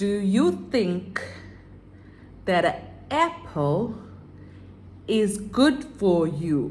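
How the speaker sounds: slow, clear, carefully spelled-out teacher-like speech. Showing how they normally talk in a class: slow, clear classroom speech. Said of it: "That's how I normally talk".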